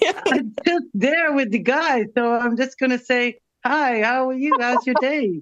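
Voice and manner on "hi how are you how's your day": put-on Caribbean accent coming through. Speaker acts out greeting a bus driver, in a Caribbean accent. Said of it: "I love your Caribbean accent coming out".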